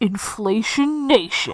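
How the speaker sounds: put-on radio announcer voice. Announcing the bit's title again, radio DJ voice. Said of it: "Done in my best radio DJ voice".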